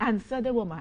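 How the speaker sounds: attempted, put-on Jamaican accent. After a joke with a friend, the speaker repeats the line in an attempted Jamaican accent. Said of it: "That was my attempt at a Jamaican accent".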